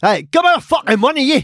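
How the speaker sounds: put-on Scottish accent. Retelling a bank robber's demand at the counter: put-on Scottish accent. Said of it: "I'd say he's Scottish".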